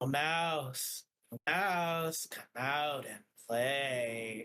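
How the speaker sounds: doubled voice, last word drawn out. Recounting what the smoke-coughing figure says in the scene: voice like two people. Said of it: "his voice sounds like two people".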